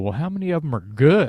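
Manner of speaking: put-on muttering under breath. Retelling own reply to writers who boast of many songs: imitating muttering under breath. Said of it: "and under my breath".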